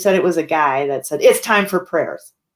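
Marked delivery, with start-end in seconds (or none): 1.2-2.3 mock very angry man's voice. Relaying what a woman told her about a man, retelling a really angry man. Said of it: "like really angry".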